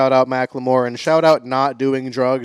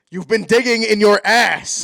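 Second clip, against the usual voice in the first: angry, mad, pitched-up delivery; 8 semitones higher than usual. Reading one line with a series of different emotions, now delivering it angry. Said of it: "And it's mad".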